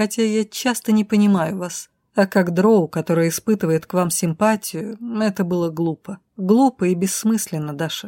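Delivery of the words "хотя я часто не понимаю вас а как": usual speaking voice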